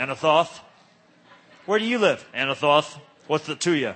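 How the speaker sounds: super cool tough-guy voice. Showing how to say a word, the speaker puts on a tough cool-guy voice. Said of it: "try and sound tough and like super cool guy".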